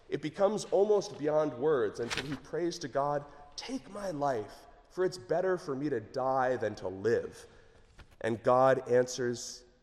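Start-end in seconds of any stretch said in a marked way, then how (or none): none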